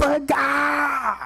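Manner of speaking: high, screeching scream at the top of the lungs. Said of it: "screaming at the top of her lungs".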